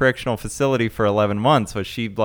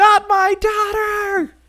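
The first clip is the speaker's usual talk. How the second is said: very high-pitched, shrill screaming cry. Recapping a fight between characters in a story, retelling a scream. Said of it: "she screams like".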